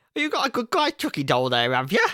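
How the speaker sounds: bad, overdone English accent, loud and swooping. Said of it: "just Mary Poppins it up the whole time".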